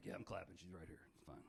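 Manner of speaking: mock very quiet, sad, joyless, half-hearted delivery. Comedian imitating married audience members who clapped, mock-sad. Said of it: "Some of you sounded very sad".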